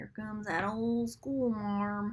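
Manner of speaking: put-on old grandfatherly man's East Texas accent. Quoting a grandfather's phrase in an east texas accent. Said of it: "He would call me an old school marm".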